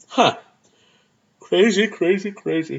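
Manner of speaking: slow, yawning drawl through a yawn. Finishing a list of Razzie nominees, the speaker talks while yawning. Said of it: "I'm yawning".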